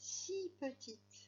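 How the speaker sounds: extra stress laid on the word si. French lesson, remarking how small something is: emphasis on the word si. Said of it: "ma voix a un petit peu insisté sur le mot si".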